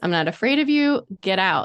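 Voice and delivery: firm, out-loud delivery. Retelling ordering an unseen presence to leave: retelling saying it out loud firmly. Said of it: "I said out loud".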